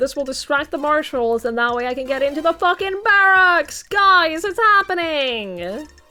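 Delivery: loud, excited shouting. Realizing the plan will get into the barracks: loud and excited. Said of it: "Sorry for getting so loud".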